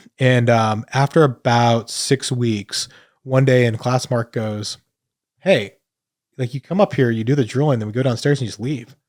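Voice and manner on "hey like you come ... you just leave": blunt speech, much faster. Retelling what someone said to them one day in class, retelling a blunt remark. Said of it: "Mark just completely blunt".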